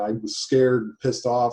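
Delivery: ordinary delivery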